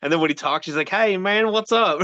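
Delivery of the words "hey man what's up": super thick Kentucky drawl, high and slow. Imitating how a friend talks: Chris's super thick Kentucky accent. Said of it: "the super thick Kentucky accent he's got".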